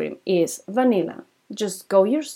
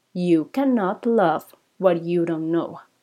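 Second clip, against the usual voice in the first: very slow, dramatic, each word drawn out; 3 semitones lower than usual. Speaking to listeners, repeating a key point for dramatic effect: very slow. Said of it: "I'm going to repeat this very slowly".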